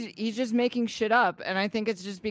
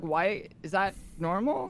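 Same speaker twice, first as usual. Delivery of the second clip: usual speaking voice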